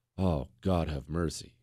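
very low, barely voiced murmur under the breath. Retelling a horrified reaction while reading, hand over mouth: imitating muttering under breath. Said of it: "you're almost saying under your breath".

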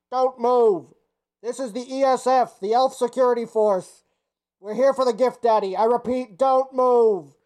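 loud, echoing call. The narrator voices the elf security force calling into a cave: loud echoing voice. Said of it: "you do hear a loud voice echoing into the cave".

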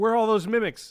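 high, loud, frantic and urgent. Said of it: "I was like".

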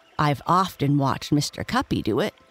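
ordinary talk

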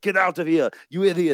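put-on loud, high-pitched, laid-on Austrian accent. Voicing the body expelling moldy food, Austrian-accented Arnold Schwarzenegger impression. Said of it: "That was a great Arnie".

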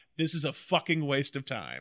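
ordinary delivery

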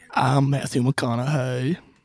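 put-on actor's sleep story voice. Repeating a line just heard from a sleep story app: Matthew McConaughey impression. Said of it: "do that voice".

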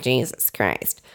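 muttered under breath. Retelling their reaction to a cake's price, the speaker mutters it under their breath. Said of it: "I like literally under my breath was like".

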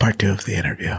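almost voiceless whisper. Telling listeners the podcast schedule, whispering. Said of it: "you don't whisper it".

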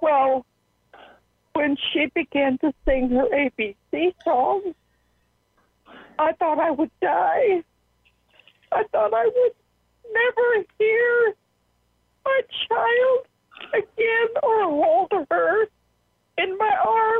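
tearful, crying while talking. Answering a question about her daughter on the stand, crying while talking. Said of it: "Right now I'm crying".

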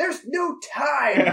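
very loud, shrill, high screaming. Retelling a scene, acting out a man's reply to a pleading woman, retelling a scream. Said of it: "he screams".

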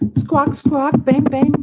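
shrill, very high-pitched bird squawks. Asked to be the birds, squawking like a bird. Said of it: "Squawk like a bird".

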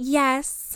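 one word in a put-on cartoonish character voice. Retelling a reality show reunion moment in an Angelica Pickles voice. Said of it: "what I can only call an Angelica Pickles voice".

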